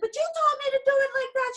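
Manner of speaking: high, fast, whiny protesting voice.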